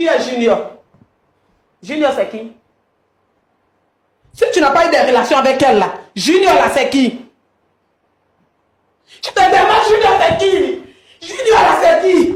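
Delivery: agitated, worked-up voice. Confronting a partner about a child named Junior: agitated, needing calming down.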